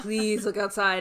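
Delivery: put-on panicked, frightened pleading. Retelling begging mom as a scared kid: imitating own panicked pleading. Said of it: "freaking out for hours".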